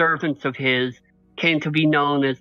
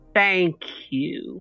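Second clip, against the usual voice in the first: very slow, dragged-out, scornful sneer; 3 semitones higher than usual. Narrating a scene, the speaker voices a woman sneering at Eris: very slow sneering. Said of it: "like like really slowly".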